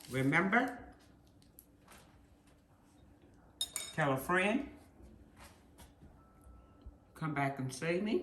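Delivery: talking while chewing, mouth full. Host signing off her cooking video to viewers while eating, talking with mouth full. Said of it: "excuse me with my mouth full".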